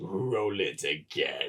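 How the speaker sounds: put-on voice, very low, deep and soft. Retelling how Ian McDiarmid walked out on stage at Celebration and spoke, in the Palpatine voice. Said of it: "says in the Palpatine voice".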